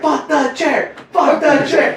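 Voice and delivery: wrestler-style yelling.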